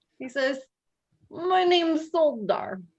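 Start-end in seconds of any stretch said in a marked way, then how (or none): 1.3-2.8 put-on heavy Russian accent, high and slow. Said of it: "in a thick Russian accent that I will now attempt to do".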